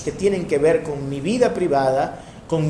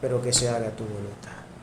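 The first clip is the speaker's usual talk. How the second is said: defeated, resigned tone of giving up; 6 semitones lower, 9 dB quieter than usual. Retelling a line spoken in defeat: acting out a defeated tone. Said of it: "con un tono ya como que de derrota".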